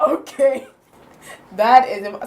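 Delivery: slow words broken by giggles. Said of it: "sorry, I'm laughing".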